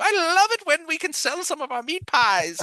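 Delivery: very high-pitched lady shopkeeper voice. Voicing an older woman upstairs talking about customers: Mrs. Doubtfire voice. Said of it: "very Missus Doubtfire kind of thing".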